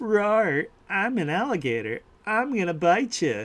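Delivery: sweet, tiny, cutesy voice, high and slow. Describing a talking alligator in a video game, in a little cutesy alligator voice. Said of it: "has like a little cutesy voice".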